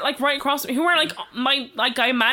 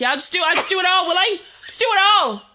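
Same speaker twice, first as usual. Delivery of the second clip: put-on higher, annoyed, angry mother voice; 6 semitones higher, 4 dB louder than usual. Retelling a mum slamming things after an offer of help: imitating an angry mum. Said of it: "the mother not washing the dishes angrily".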